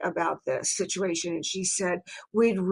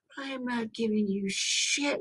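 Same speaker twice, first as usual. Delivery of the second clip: mock scream, higher pitch; 4 semitones higher, 7 dB quieter than usual. Retelling a phone call with Sharon: imitating someone screaming. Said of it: "She's screaming at me".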